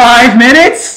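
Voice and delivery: shrill, very loud, high-pitched shout. Repeating what the other speaker just said, yelling. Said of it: "You can quit yelling".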